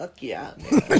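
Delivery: laid-back slacker stoner dude voice. Retelling a juice bar worker's reply: imitating a stoner dude. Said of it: "this little fucking stoner dude".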